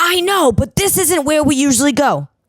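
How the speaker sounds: mock very high-pitched, shrill yelling. Recounting a car argument over where to go, retelling a woman's yelling. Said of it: "She's yelling at me".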